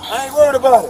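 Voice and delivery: high, loud screaming and hollering rant.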